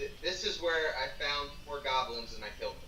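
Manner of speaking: normal talking voice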